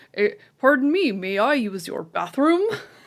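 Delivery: loud put-on American accent. Retelling a comedy sketch where a tourist walks into a pub: imitating an american accent. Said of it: "Fucking accent".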